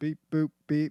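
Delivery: loud, very bad robot voice with beeps. Claiming a robot is easy to play, the speaker shows one: bad robot impersonation. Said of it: "That was the worst robot impersonation".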